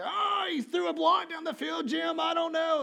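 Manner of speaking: very loud, very high, rough announcer-style freak-out. Imitating a football announcer calling a quarterback's block: Tony Romo impression. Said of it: "That's my Tony Romo impression".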